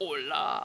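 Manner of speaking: deep, low man voice. Voicing a raven that mimics words: deep man voice raven. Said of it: "the deep man voice raven".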